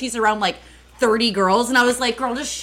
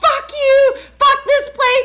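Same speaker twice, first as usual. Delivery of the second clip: play-acted wild, shrill, very high pitched shrieked screaming; 5 dB louder than usual. Telling how a barefoot woman being carried away screamed, retelling her screaming. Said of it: "she's screaming".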